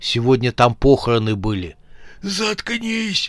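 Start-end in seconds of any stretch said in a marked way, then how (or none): 2.2-3.3 very high, hissing hush. A bandit in a graveyard at night hushes his partner, hissing. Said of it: "зашипел Резак".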